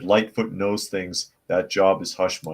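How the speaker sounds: ordinary talk, nothing marked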